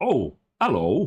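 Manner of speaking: put-on Midlands English accent. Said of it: "he's got a very Midlands English accent".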